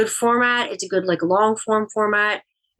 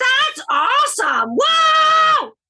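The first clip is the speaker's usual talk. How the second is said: put-on very high, swooping wild yelling, stretched whoa; 4 dB louder than usual. Recalling yelling alone in the basement, the speaker acts it out, imitating someone screaming. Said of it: "screaming at the top of his lungs".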